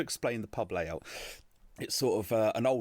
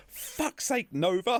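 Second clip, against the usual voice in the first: mock top-of-the-lungs yell, shrill, very high, full volume; 5 dB louder than usual. Retelling a woman in a pub suddenly yelling at her child: imitating a woman shouting. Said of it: "Just at the top of her voice".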